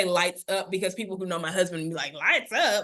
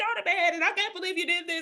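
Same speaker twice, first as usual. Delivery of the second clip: put-on emotional, frustrated scolding tone, much higher; 10 semitones higher than usual. Retelling their own past bedtime scolding, contrasted with a flat reply, imitating own emotional scolding. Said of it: "I'm all emotional with it".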